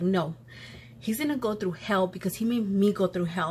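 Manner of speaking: ordinary talk, nothing marked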